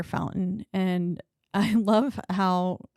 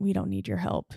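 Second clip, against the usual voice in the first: half-whispered, hushed stage whisper. Retelling a movie scene where the father speaks to the mom: imitating a half-whisper. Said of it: "basically whispering in the mom's ear".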